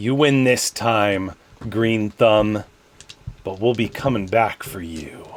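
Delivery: snarled villain voice. Narrator voicing the leader of attackers as they run off, snarling. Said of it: "the leader snarls uh, some curses and says".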